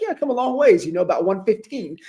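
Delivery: put-on Connecticut accent. Retell the reply of a man from Connecticut who came a long way, in a put-on Connecticut accent. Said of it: "You even threw in the Connecticut accent".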